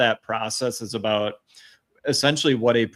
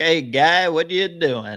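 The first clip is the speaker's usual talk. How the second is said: nasal voice, pitched much higher; 6 semitones higher, 3 dB louder than usual. Discussing a film about producer Robert Evans, the speaker does a nasal Robert Evans impression. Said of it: "he had a funny like nasally voice".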